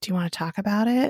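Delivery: put-on whisper. Retelling a scene where Mark asks her a question: imitating Mark's whisper. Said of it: "whispers, like".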